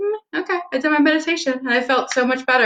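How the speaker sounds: high, quick, relieved and refreshed sigh.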